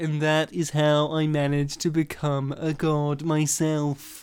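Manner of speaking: slow, drawn-out adult narrator voice. Imagining the story's adult narrator as Will: imitating Will. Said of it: "your impression of himself".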